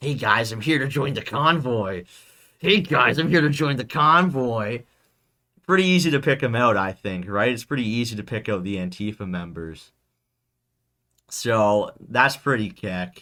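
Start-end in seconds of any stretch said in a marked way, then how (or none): 0.0-4.8 sneering, mocking voice, repeated. Acting out a skinny freak with piercings arriving to join the convoy: imitating a skinny pierced newcomer. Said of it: "some skinny fucking freak with, like, piercings coming up".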